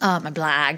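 upstate Central New York accent on my blog. Repeating the words 'my blog' in an upstate Central New York accent. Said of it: "That was upstate Central New York accent for you right there".

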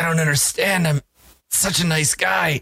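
gurgling dying voice. Voicing a man dying after his neck is snapped: dying, gurgling. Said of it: "he gurgles a little bit, and, and as he dies".

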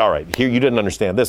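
ordinary talk

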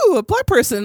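mock giddy, thrilled outburst, very high. Retelling own reaction while watching, said out loud at home: imitating own excited reaction. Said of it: "Very excited about that".

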